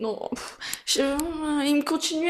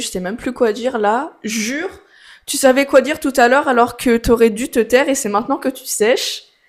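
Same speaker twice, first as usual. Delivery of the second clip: ordinary talk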